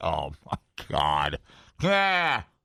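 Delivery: put-on low, very drawn-out wailing scream. Retelling what was heard from a woman in a tent with bears; imitating a woman screaming. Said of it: "her screaming started".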